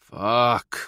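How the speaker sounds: groaning voice. Reading a story aloud, the narrator reacting to advice: groaned. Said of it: "I groaned".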